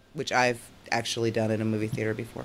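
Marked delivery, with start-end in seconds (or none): none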